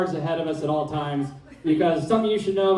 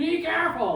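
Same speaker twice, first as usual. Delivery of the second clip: mock shrill yell, very high-pitched; 11 semitones higher, 4 dB quieter than usual. Telling a sledding story, the speaker re-enacts yelling a warning to friends. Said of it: "And I'm just yelling".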